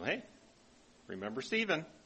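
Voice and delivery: put-on playful teasing. Retelling an assistant pastor teasing the speaker before being ordained a deacon: retelling playful teasing. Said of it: "He was teasing".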